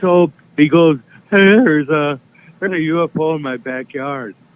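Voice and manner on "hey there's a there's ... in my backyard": mock drunk slurring, higher pitch. Retelling what a very drunk caller said: imitating a very drunk caller. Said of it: "super, super inebriated. Can barely talk".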